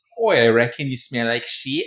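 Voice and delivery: put-on, convincing, broad Australian accent. Joking about Australians smelling, one speaker does a convincing Australian accent. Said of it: "you're good at this".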